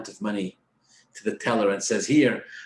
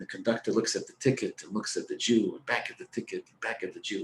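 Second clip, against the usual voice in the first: normal talking voice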